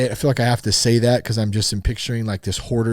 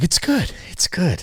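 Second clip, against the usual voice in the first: put-on meltdown voice, higher; 7 semitones higher than usual. Quoting the Christmas Vacation eggnog meltdown: Clark Griswold eggnog meltdown. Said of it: "when he's having his meltdown drinking the eggnog".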